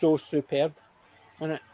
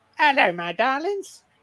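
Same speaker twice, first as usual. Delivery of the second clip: high, squeaky, pitched-up little voice; 9 semitones higher, 3 dB louder than usual. Speaker talks about loving a comedian whose film he reviewed: squeaky Charlie Drake voice. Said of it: "Just a dead squeaky voice".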